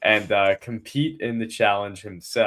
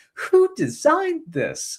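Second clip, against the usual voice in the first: put-on voice crack, much higher. Describing the host losing his composure, imitating Jeff Probst's cracking voice. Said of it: "now he's like voice cracking".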